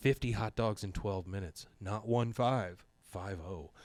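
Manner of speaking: quiet, low whispering. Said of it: "she's whispering in Bill's ear".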